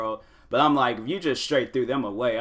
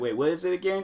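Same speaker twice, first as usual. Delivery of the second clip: confused, lost, unsure tone, pitched up; 7 semitones higher, 4 dB quieter than usual. Imitating viewers who miss the sponsor name: imitating a confused viewer. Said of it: "some people might be all like".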